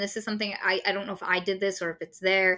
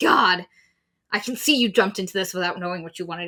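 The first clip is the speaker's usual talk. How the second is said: ordinary delivery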